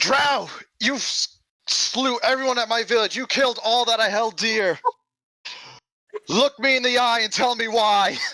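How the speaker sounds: very high, in-character battle yell. Confronting a drow in character, holding up a Medusa's head: yelling in character. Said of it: "I will yell out".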